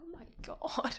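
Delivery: high, stunned, shocked whisper.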